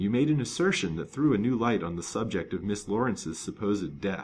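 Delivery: ordinary delivery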